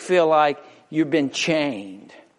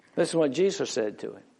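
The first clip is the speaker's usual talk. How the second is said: ordinary talk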